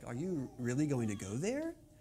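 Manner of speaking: pitch lifting up on there. Contrasting question inflection that goes up: pitch rises on there. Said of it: "their inflection does not normally go up like ours does, like".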